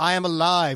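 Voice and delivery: loud scream at the top of the lungs. Quoting a line the movie's hero screams: imitating a scream. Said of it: "which he screams".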